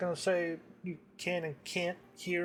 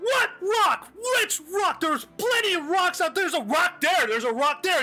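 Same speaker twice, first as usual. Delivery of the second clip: very high, very loud, shrill, exasperated screaming; 12 semitones higher, 9 dB louder than usual. Describing a loud couple outside, acting out the man: retelling his yelling. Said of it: "And the man goes".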